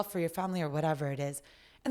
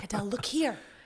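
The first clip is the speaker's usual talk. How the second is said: mock whispering, put-on whisper. Acting out a voice in the head calling for attention: mock whispering. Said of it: "like whispering".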